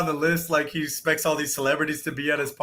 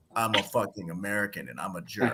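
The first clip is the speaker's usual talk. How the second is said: very low, deep, very quiet, hushed mutter; 9 semitones lower, 10 dB quieter than usual. Mocking an actor's American accent in his roles: House impression. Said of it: "he sounds like House".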